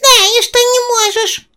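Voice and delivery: tiny, very high squeaky critter voice. Narrating a tale, the little spider answers the other character in a squeaky little voice. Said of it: "писклявым голоском ответил паучок".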